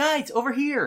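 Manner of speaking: very high, loud yell. A game master voices a small character calling the group from across the room, yelling. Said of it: "And he yells".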